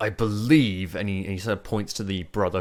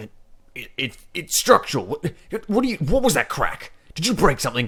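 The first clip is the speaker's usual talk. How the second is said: put-on stammering voice, pitched much higher; 8 semitones higher, 5 dB louder than usual. Describing a man checking his warehouse for a noise, imitating a stammering man. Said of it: "he sort of like stops smoking. He's like".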